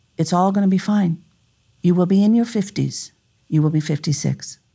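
deepest, very calm voice. Retelling a voice heard while weeping: deepest calm voice. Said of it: "the deepest calm voice".

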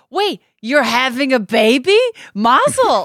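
put-on excited voice. Retelling a clip of an interviewee hearing about a baby: imitating an excited Mandy Patinkin. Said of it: "and he's so excited. He's like".

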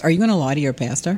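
ordinary talk, nothing marked

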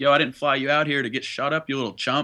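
mock, toned-down, half-hearted yell. Retelling Mike yelling down from a hill at practice, imitating Mike yelling. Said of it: "And he yelled".

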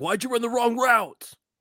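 very high, prolonged screaming. Imitating Derek Carr screaming at his receivers: imitating Derek Carr screaming. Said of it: "He's screaming at his receivers".

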